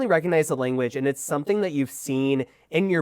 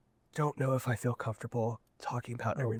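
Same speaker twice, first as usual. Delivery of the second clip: whispering, lower and quieter; 3 semitones lower, 11 dB quieter than usual. Voicing a character who hugs you and whispers in your ear: whispering in character. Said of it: "he kinda whispers in your ear".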